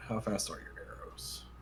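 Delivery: whispered, hushed mutter out of the mouth's side. Falcon, walking along, turns to Ida and mutters out of the side of his mouth. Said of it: "He just mutters out of the side of his mouth".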